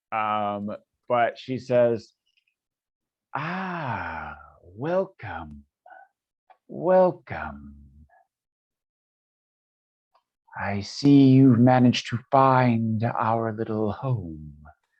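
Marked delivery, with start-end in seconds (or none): 3.3-14.5 very deep, low-pitched, drawn-out female voice. Voicing a large figure greeting the group: very low-pitched female voice. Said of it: "a female voice, but it's pitched very low".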